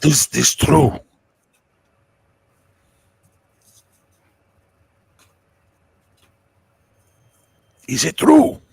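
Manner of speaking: very loud, drawn-out stage whisper. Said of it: "he's whispering to him".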